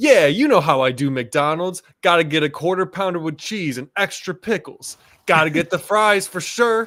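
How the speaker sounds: high, loud ad-style voiceover. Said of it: "a [name] voiceover with him being like".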